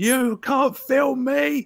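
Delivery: very high, very drawn-out, slow shrieking yell. Retelling a woman shouting at a tourist: imitating a woman shouting. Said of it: "fucking just shouting in this guy's face".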